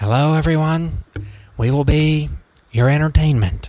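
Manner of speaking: eerie, unsettling, high creepy villain voice. Podcast host greeting listeners in a freaky put-on voice. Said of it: "his voice was freaky".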